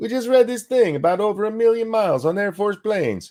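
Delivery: clumsy, bad Italian accent, way up high. Retelling a story and quoting Angie: imitating Angie in an Italian accent. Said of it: "I can't do an, uh, Italian accent".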